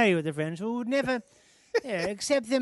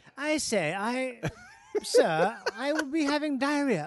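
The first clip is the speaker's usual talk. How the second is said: slow, drawn-out, put-on British accent; 2 semitones higher than usual. Acting out a guy announcing his shoe fell off: put-on British accent. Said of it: "British guy that announces to a room".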